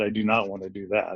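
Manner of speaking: ordinary talk, nothing marked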